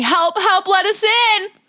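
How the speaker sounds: shrill, very high, loud scream. Voicing a character pounding at a barricaded door: in-character scream for help. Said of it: "Brenna starts screaming".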